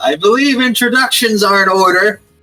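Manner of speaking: yelling out loudly. Addressing the lady at the top of the stairs, yelling out. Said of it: "And I yell out".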